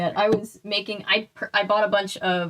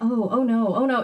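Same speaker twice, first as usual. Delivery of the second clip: put-on frightened, worried voice, drawn-out, sounding dismayed; 2 semitones higher than usual. Retelling a call about card fraud, quoting the lady: imitating someone sounding very scared. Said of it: "the lady sounded very scared".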